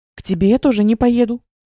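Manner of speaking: high, rapid blurt in one breath. Reading the narrator's retort to Kirill, blurted in one breath. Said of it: "выпалила на одном дыхании".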